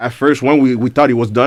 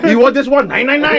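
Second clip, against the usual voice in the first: very high-pitched put-on German accent; 13 semitones higher than usual. Imitating the other speaker picking songs: imitating a German accent. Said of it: "I did use a German accent".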